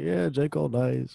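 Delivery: deadpan, flat, slow, with no enthusiasm. Teasing another speaker's reaction to j. cole: imitating someone unenthusiastic. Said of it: "I love the lack of enthusiasm. He's like".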